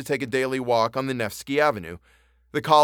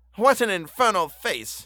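revolted, pitched-up cry of disgust; 7 semitones higher than usual. A man alone looks at himself in a mirror, exclaiming in disgust. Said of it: "he exclaimed, and spat with disgust".

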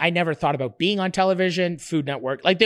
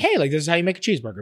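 put-on quiet, calm delivery. Recalling how they talked in their first videos, imitating own old quiet delivery. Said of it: "I talk with a low voice like this".

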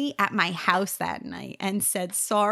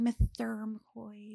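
put-on lisp, much quieter; 8 dB quieter than usual. Recalling a middle school teacher, the speaker imitates Mr. McCoy's lisp. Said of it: "he kind of had, like, a lisp".

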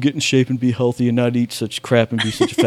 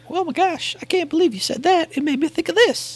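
very high, squeaky put-on cartoon-mouse voice; 3 dB quieter than usual. Imitating another speaker while asking for last-minute additions: Eric voice. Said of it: "That's also my Eric voice".

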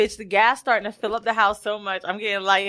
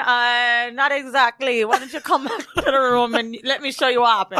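put-on, mock Jamaican accent. Retelling what a man said to the speaker, in a put-on Jamaican accent. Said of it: "getting a Jamaican accent".

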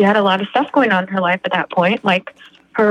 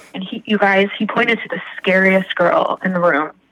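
normal talking voice

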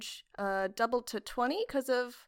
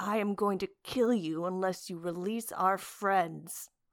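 low, close, menacing growl; 4 semitones lower than usual. A player's character, squeezing an enemy in its coils, growls in his ear. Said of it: "growling in his ear".

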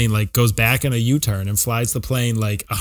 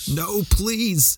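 mock begging, high-pitched plea; 8 semitones higher, 3 dB quieter than usual. Retelling a movie henchman's plea for his life: imitating a henchman begging. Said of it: "He kinda just begged for his life".

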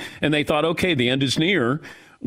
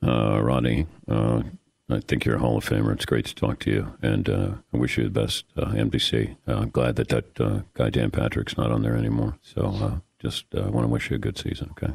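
rough-edged, creaky, raspy put-on coach voice; 3 dB quieter than usual. Showing a Belichick impersonation after being asked to see it: Bill Belichick impression. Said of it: "my Belichick impersonation".

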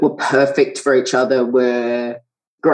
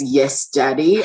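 put-on sparse, sinister delivery. Quoting a character's line from a scene: imitating a sparse, sinister delivery. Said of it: "in this completely sparse and sinister way".

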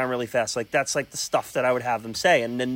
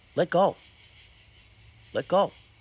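grave, heartfelt, earnest tone, pitched up; 5 semitones higher than usual. Showing how a film character should deliver a farewell line: said seriously. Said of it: "he should look at her seriously".

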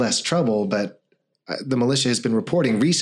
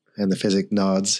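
ordinary delivery

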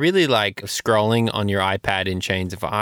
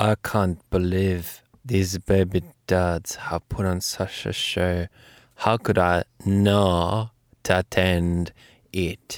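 put-on sultry voice, much lower in pitch; 3 semitones lower than usual. Coaxed to try, speaker finally does it, in a sultry Elon impression. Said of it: "can you say in your sultry".

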